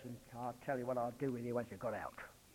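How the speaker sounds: quiet muttered aside. Voicing the king of Assyria's aside, retelling an under-breath mutter. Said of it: "under his breath he says".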